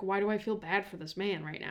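ordinary talk

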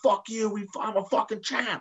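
very high, raw shriek at the top of lungs. Retelling a championship celebration video of himself: imitating own screaming. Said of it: "absolutely screaming at the top of my lungs".

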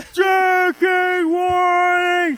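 very high, slow, stretched-out huge shout.

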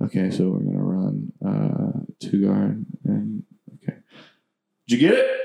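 hushed, quiet, slow, unhurried speech. Retelling how coaches give plays during loud crowd noise: imitating coaches talking quietly. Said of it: "all the coaches talk like this".

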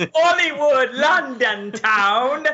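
put-on British accent.

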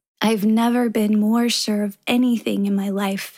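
plain

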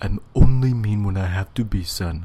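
failed, botched stern regal king voice with Jamaican edge. Acting out a scene with Simba, in a failed Mufasa impression. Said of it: "You don't even sound like Mufasa".

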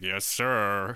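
heavily sarcastic delivery. Retelling Barnes answering the lieutenant: imitating Barnes's sarcastic 'yes, sir'. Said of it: "Barnes just very sarcastically is like".

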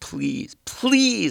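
very high desperate begging. Retelling crying and begging in a car, imitating own raised-voice begging. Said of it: "raising my voice".

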